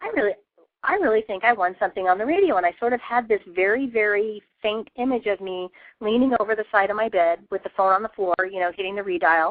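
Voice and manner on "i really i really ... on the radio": insistent, growing certainty, rising stress on "really". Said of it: "I'm like".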